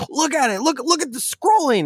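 excited voice.

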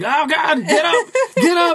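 very high, very slow, drawn-out screaming. Player recalling slamming the buttons in a game, re-enacting yelling and screaming. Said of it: "yelling and screaming".

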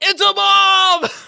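mock very high, loud, rough booming yell, bomb drawn out. Recapping a scene, Sledge opens the box: Sledge's loud shouted voice. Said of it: "In like this loud ass voice".

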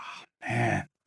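acted disgusted, grossed-out groan. Storyteller describing a guy who sees you throw up, imitating a disgusted groan. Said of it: "The guy is just like".

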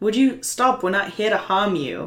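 would-be booming, loud voice. In a tabletop game, a player speaks in character to make him listen: booming voice. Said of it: "I make my voice boom".

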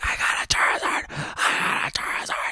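put-on breathless, airy scream. Retelling pulling a rare card as a kid: imitating a breathless scream. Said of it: "so I was just screaming".

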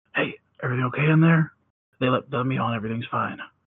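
very quiet, hushed, low-key reassuring tone. Describing what their character does in a tabletop game, very quiet. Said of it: "very quietly go".

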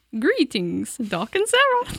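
comical, high, sing-song funny mother voice. Reading aloud an email from a co-host's mom, in a funny voice. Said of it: "I could read that one in a funny voice".

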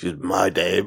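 low movie narrator voice-over style. Quoting the film's narration: Clive Owen voice. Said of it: "hearing Clive Owen's voice going".

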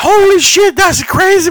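put-on panicked children freaking out, squealing, very high. Retelling what the kids in front shouted: imitating kids freaking out. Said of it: "freaking out".

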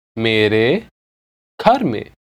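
slow, deliberate, each word carefully spaced. Repeating an example phrase again in a language lesson, said slowly. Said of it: "I'll say it again slowly".

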